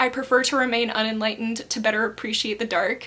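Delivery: ordinary delivery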